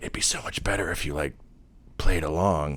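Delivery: soft, hushed, leaned-in whisper. Retelling a scene where Q leans forward to Picard: imitating Q whispering. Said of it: "Q leans forward at, like, to whisper to him".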